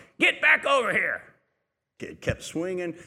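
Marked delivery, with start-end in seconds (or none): 0.2-1.2 put-on high-pitched yell, hollering. Telling a story about a Taco Bell visit, imitating a parent yelling. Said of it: "the parent yelled from across the restaurant".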